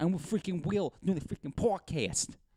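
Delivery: put-on New York accent, high. Podcast co-host jokes around in an accent mid-episode: put-on New York accent.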